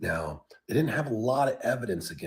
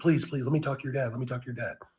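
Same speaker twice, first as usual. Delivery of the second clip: put-on panic, pleading, higher and faster; 4 semitones higher than usual. Retelling what a man begged on the phone, imitating him freaking out. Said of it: "And he's freaking out".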